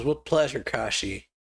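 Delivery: normal talking voice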